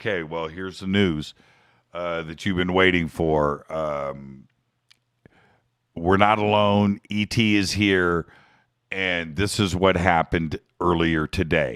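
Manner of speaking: dry, low, expressionless, deadpan newscaster voice. Imagining TV anchors breaking news to the camera: mock-deadpan news announcement. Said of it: "look deadpan in the camera and go".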